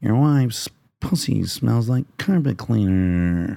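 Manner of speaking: nasal drawl with each word dragged out. Quoting a film line as an actor's impression: Bukowski impression from Barfly. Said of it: "he was doing an impersonation of him".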